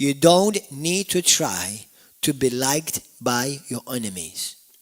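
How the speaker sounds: slow, deliberate, word-by-word emphasis. Repeating a line for emphasis to listeners: slow and deliberate. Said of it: "Let me say that slowly".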